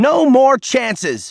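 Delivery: very high, near-shouted voice. A narrator reads a lawyer's outburst, almost shouting. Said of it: "The lawyer raised her voice almost to a shout".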